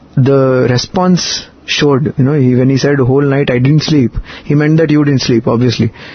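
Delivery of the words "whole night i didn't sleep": ordinary talk, nothing marked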